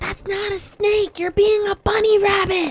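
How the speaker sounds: hushed voice. Speaking in character to the party about a supposed snake: whispering. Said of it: "I whisper".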